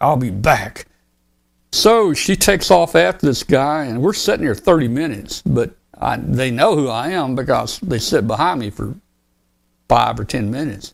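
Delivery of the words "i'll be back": put-on stern, firm, no-nonsense tone. Retelling what the woman at the car window said: imitating a stern voice. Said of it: "she said it very stern, like".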